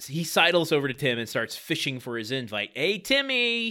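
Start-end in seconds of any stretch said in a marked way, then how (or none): 2.7-3.7 obnoxious comic voice, pitched up. Acting out someone sidling over to Tim for an invite, obnoxious Jerry Lewis voice. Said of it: "This is not his voice at all, but it's I'm giving him a Jerry Lewis it's obnoxiousness".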